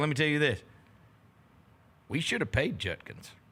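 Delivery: put-on Southern accent. Retelling what a college booster said to them, imitating a southern accent. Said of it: "he's got a great Southern accent".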